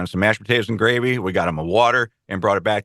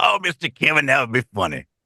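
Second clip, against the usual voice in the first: put-on older gentleman voice, much higher; 6 semitones higher than usual. Recounting how a man agreed to be impersonated, imitating Larry. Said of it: "can I try and impress impersonate you".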